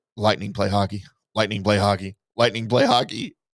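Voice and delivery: muttered under the breath. Retelling how another person kept repeating a phrase: retelling a muttered aside. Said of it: "JP under his breath".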